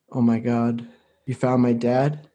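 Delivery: heartfelt, earnest, emotional tone. A woman on the phone, bracing for news about her father, earnest emotional tone. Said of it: "earnest and almost like an emotional tone".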